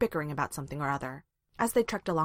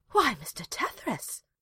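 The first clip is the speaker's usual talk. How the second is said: mock-shocked, scandalized gasp, pitched up; 7 semitones higher than usual. A woman presses a scandalized hand to her chest and answers a man, gasping. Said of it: "she gasped".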